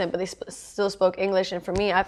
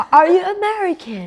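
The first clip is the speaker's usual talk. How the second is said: awful, bad put-on English accent, loud; 11 semitones higher, 7 dB louder than usual. Acting out a remembered exchange, in an English accent. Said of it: "I don't know why I did it like that".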